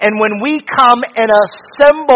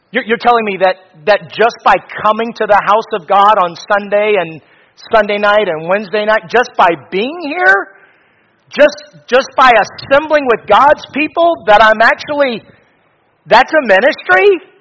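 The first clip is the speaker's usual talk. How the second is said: normal talking voice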